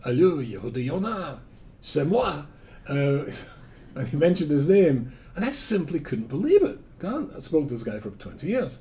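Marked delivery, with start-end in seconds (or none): 0.0-2.4 put-on speaking with a French accent. Retelling a phone call from a man the speaker had clashed with, imitating a french accent. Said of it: "he had a French accent".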